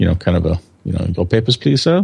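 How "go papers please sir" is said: fake, put-on Chinese accent. Describing factory ID rules in China, speaker says a phrase in a put-on Chinese accent. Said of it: "but with a Chinese accent".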